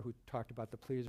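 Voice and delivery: ordinary delivery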